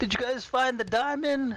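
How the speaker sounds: very high-pitched, far-carrying yell. Calling through the mist to the others in the game: yelling through the mist. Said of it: "I'm gonna yell through".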